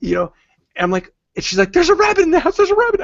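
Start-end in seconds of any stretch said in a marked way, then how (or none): 1.7-3.0 very high, breathless, rushed excited rattle. Retelling a phone call at the office, imitating excited very fast talk. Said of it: "whatever she was saying was so fast".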